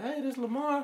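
high woman's voice. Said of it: "it's a female voice".

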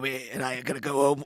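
low gravelly put-on voice. Answering the other speaker, slipping into a Harvey Fierstein impression. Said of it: "that was a better Harvey Fierstein".

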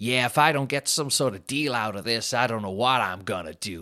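put-on North American accent. Retelling two reality-show bachelors overheard at lunch, imitating North American accent. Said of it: "that's exactly how they talk as well".

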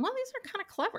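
mock impressed, very high, fast squeak.

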